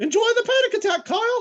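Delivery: squeaky, very high, loud and bleak. Showing a comedy bit about a trauma trigger: nihilistic Mickey Mouse voice. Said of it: "I do a Mickey Mouse voice".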